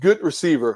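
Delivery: leaning hard on 'good receiver'. Breaking down a receiver's catch against a defender: stressing 'good receiver'. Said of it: "I emphasize the words good receiver".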